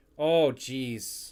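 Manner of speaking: Wisconsin accent slipping out, exclaiming. Reacting to a player's number, Wisconsin accent slipping out. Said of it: "That got the whole Wisconsin accent coming out".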